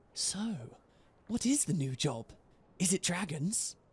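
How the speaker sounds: hushed, secretive, confiding conspiratorial tone. Colleen leans across the table to ask a question, in a conspiratorial tone. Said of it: "in a conspiratorial tone".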